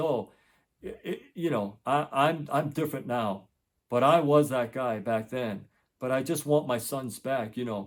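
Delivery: ordinary delivery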